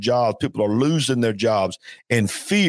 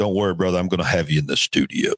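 deep, on-air radio announcer voice; 5 semitones lower than usual. Telling a brother on the show he'll have him in the studio, in a radio voice. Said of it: "That's my radio voice".

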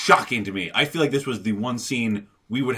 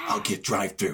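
curt, terse tone, lower and quieter; 4 semitones lower, 5 dB quieter than usual. Retelling how a film butler answers: imitating a terse line. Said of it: "really terse".

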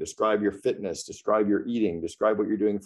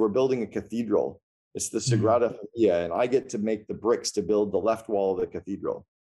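plain

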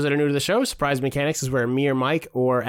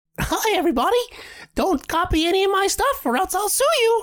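very high, swooping, bouncy cartoon squeak. Announcing the next impression, then doing a Mickey Mouse voice. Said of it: "so Mickey Mouse".

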